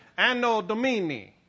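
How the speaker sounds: mock put-on Italian accent. Showing an audience their Italian accent on two words, put-on Italian accent. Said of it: "This is my Italian accent".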